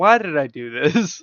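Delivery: fed-up, exasperated tone. Describing how a fellow character has acted the whole time: imitating someone exasperated. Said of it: "exasperated is, like, the entire time".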